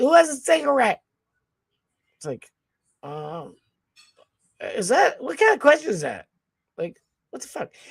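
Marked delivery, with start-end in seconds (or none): 0.0-1.0 put-on, high, hollered yell. Retelling how a loud woman called out in the packed lobby: imitating a woman yelling. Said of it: "she yells".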